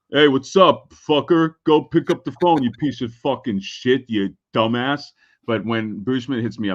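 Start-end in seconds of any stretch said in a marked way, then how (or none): 0.1-5.0 crude, rowdy, foul-mouthed buddy ribbing. Speaker contrasts how most friends message with a refined friend; imitating crude friends. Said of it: "most of my friends are just like".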